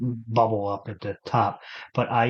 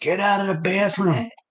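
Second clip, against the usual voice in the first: put-on yell, higher; 9 semitones higher than usual. Retelling how a grandfather used to yell about the bathroom: imitating grandfather yelling. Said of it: "my grandfather used to yell at me".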